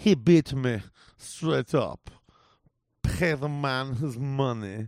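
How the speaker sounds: put-on phoned-in, tossed-off Russian gangster accent. Describing an actor's brief mob-boss role, the speaker imitates Malkovich's phoned-in Russian accent. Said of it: "his accent's like".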